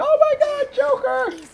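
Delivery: shrieked, long, very high, drawn-out scream. Retelling hearing of an announcement: imitating own scream. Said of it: "screamed from the top of my lungs".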